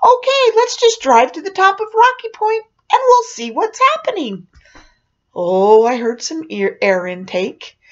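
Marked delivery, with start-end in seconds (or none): 0.0-4.5 very high, cheerful sing-song auntie voice. Retelling making a U-turn and speaking to Rod in the back seat, in a cheerful voice. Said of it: "I say in my cheerful Aunt [name] voice".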